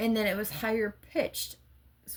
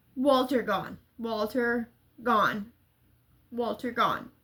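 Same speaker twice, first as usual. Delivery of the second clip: ordinary talk, nothing marked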